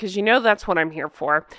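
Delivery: ordinary delivery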